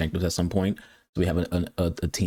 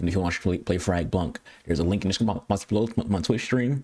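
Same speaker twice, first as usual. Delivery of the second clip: rattled off, very fast and rushed. A streamer telling Twitch viewers where to find the Frag Punk link, talking very fast. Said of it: "I'm talking very, very, very fast".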